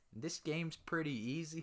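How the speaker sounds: mock young high-pitched southern voice. Retelling own childhood video intro: imitating own younger high-pitched southern accent. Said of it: "used to be so high-pitched and had such a southern accent".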